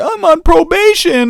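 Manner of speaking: frightened, pleading, very high-pitched voice. Retelling what he said after the security office: imitating someone scared. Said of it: "he was all scared".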